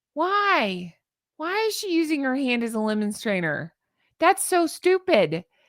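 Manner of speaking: baffled disbelief with the word why stretched out. Reacting to someone using her hand as a lemon strainer: yelling in disbelief. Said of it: "I'm yelling".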